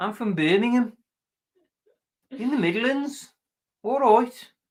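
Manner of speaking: mock Birmingham accent, very high-pitched. Going through uk regional accents, stereotypical birmingham accent. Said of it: "in Birmingham it's uh".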